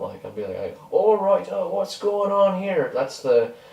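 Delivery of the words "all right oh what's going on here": very high-pitched put-on town guard voice. Showing an accent used for a town guard character: town guard accent. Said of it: "that's the accent of, uh, a town guard that I play".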